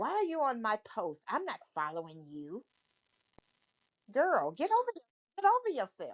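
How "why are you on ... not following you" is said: acted angry, mock-angry tone. Retelling what a woman said back to her comment on a post, imitating an angry reply. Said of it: "you could just hear the anger".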